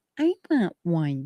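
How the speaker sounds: mock adorable small voice. Retelling a granddaughter asking for one: imitating a little adorable voice. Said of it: "in that little adorable, scrumptious, delicious voice".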